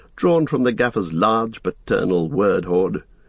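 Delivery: ordinary delivery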